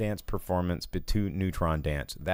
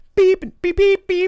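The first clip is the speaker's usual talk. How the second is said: imitated bleeps, squealed very high and loud. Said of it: "Hugh Jackman's like".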